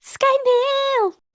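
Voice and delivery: high-pitched excited voice. Repeating a word on request, high-pitched excited call. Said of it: "I like that you went so high there".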